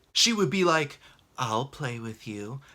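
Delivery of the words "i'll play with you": seductive, coaxing voice, laid on thick. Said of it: "she would say things in a seductive way".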